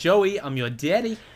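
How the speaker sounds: failed Australian accent. Talking about school nicknames, the speaker tries a bad australian accent. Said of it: "That was not an Australian accent in the slightest".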